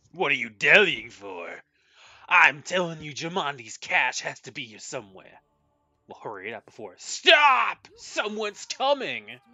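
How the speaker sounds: hammy, loud, swooping put-on fantasy bandit voice. Speaker voice-acting bandits' lines, in a bandit voice. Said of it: "like my bandit voice acting".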